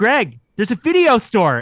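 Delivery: high, swooping, far-carrying yell. Retelling calling down the block to greg: retelling own yell. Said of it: "I yelled at Greg".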